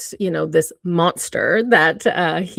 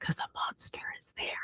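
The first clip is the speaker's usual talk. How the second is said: put-on very quiet, frightened, small child's whisper. A mother retells her son's answer about the closed bathroom door: retelling a whisper. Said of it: "and he whispers".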